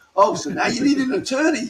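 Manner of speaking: put-on shrill, very high shouting. Retelling how an officer reacted to asking for an attorney: imitating someone shouting. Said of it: "He starts shouting at me again".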